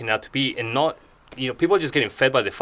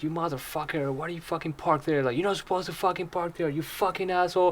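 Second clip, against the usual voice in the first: high-pitched, enraged, furious swearing; 5 semitones higher, 6 dB quieter than usual. Retelling how an old man yelled at a parked driver: imitating a man cussing someone out. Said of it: "he starts cussing him out".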